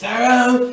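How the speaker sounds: high, loud, raspy stern teacher voice. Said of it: "she had this raspy ass voice too".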